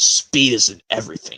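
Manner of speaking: smug, self-satisfied, superior, low voice. Reading a story of engines aloud, answering another engine's boast: James, smug. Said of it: "said James smugly".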